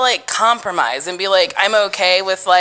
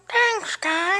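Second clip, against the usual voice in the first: very high, soft, silly pet voice; 13 semitones higher, 6 dB quieter than usual. Ending a podcast, thanking everyone on the dog's behalf in Clyde's dog voice. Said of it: "Is that your voice?".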